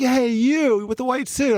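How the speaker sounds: play-acted, high-pitched, irate angry yell. Retelling how a guy started yelling at the speaker, retelling a guy's yell. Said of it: "I hear this guy yelling at me".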